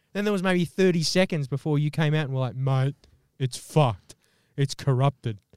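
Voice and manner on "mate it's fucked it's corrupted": fake, put-on low, deep voice. Retelling how a friend reacted to a corrupted file, in a put-on deep voice. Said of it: "That's how I do my deep voice".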